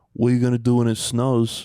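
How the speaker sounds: imitated New York accent. Retelling what a building maintenance guy said to mom: imitating a new york accent. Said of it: "he had, like, a New York accent".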